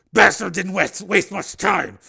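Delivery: teeth clenched, gritted, rough creaky edge. A man who just saw a chopper explode speaks through gritted teeth. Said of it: "Steele said through gritted teeth".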